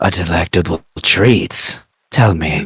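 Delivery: deep, low demonic voice. Narrating a voice clearly not the character's own: deep demonic voice. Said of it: "in a demonic, deep voice that is clearly not Embren's".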